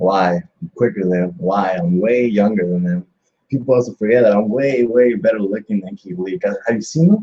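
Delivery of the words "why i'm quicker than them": normal talking voice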